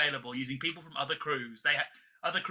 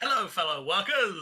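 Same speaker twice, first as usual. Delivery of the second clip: put-on Italian South Bronx accent; 3 semitones higher than usual. Discussing Bruce's disguises, quoting him in an Italian South Bronx accent. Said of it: "it's always like Italian guy from the South Bronx".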